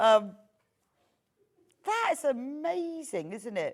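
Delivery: laughing through words, very slow and high. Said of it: "Sorry, I'm laughing".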